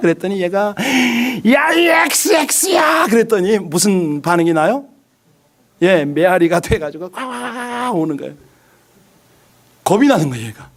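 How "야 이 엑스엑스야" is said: very high, shrill acted-out shout. Retelling how the boy shouted a curse at the mountain: imitating a boy shouting loudly. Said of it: "큰 소리로 해라".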